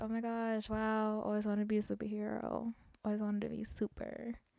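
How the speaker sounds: sarcastic, feigned amazement. Retelling own reply to a friend about superpowers: imitating own sarcastic reply. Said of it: "And I was being sarcastic".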